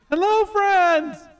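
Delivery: very loud, very high-pitched yell. Showing how to call out to far away folk: yelled greeting. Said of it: "you just yell like this".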